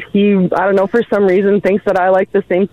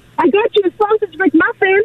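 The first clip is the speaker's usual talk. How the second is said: very high, worked-up, acted-out excited voice; 12 semitones higher than usual. Retelling what a spouse said on vacation: imitating someone excited. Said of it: "he's all excited".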